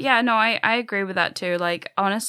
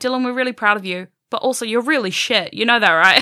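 put-on sarcastic teasing tone, louder, higher; 3 semitones higher, 7 dB louder than usual. Quoting British relatives teasing the speaker during a visit: mimicking sarcastic teasing. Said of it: "constantly sarcastic and horrible".

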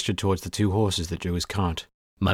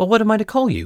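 flustered and thrown, very high pitched; 14 semitones higher, 4 dB louder than usual. Narrating a character, corrected twice by an old man, asking him flustered. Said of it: "Kory asked, flustered".

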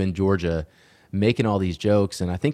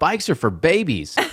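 put-on yell, high pitched, projected across room; 8 semitones higher than usual. Imagining a woman walking into a biker bar, acting out her yell. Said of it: "she just yells out".

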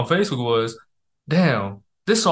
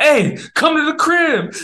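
very high-pitched, put-on holler; 13 semitones higher, 4 dB louder than usual. Telling the story of taking shots with three dudes, retelling own past yelling. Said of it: "I start yelling at people".

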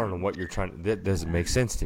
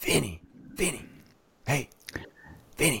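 high stage whisper called out loudly; 9 semitones higher than usual. Demonstrating how he calls out to a friend named Vinny, whisper-yelling. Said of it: "I feel like it's whisper yelling".

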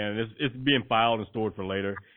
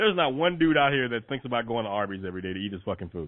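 plain

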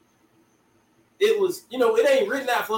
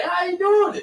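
mock stunned, high-pitched, slow, drawn-out delivery. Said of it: "You be like".

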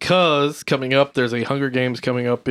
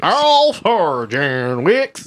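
bad auctioneer style, higher and louder; 4 semitones higher, 4 dB louder than usual. Hosts announcing next week's films; one repeats the title count in a bad auctioneer voice. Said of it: "Sounds like a bad auctioneer".

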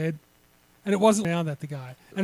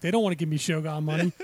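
normal talking voice

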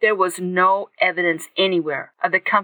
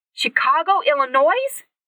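excited, lively voice, high and swooping; 8 semitones higher than usual. Reading a novel aloud, a character asks a question: excited voice. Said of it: "Katie said in an excited voice".

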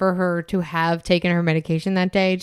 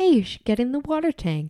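kind, friendly, gentle, sweet voice, pitched up; 6 semitones higher than usual. Describing the good voice a killer hears, imitating a soft, nice voice. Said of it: "the good voice is just softer and nicer".

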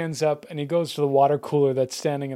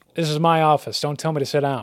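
normal talking voice

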